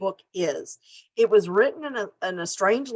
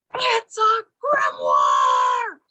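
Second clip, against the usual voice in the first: put-on yelling with the voice swinging and swooping; 4 dB louder than usual. Retelling screaming at the tv about a mystery book: imitating herself screaming. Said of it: "I'm screaming at the T V going".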